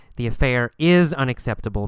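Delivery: ordinary delivery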